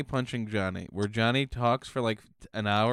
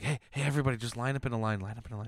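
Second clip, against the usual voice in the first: quieter, imitated whisper; 4 dB quieter than usual. Acting out an improviser lining up his group: imitating a whisper. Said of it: "whispers to everybody in his".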